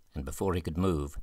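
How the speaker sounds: plain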